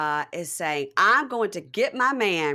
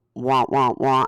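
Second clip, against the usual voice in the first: muffled cartoon wah-wah voice, louder; 7 semitones lower, 4 dB louder than usual. Retelling what someone said on a phone call: Charlie Brown's teacher wah-wah. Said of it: "Charlie Brown's teacher says".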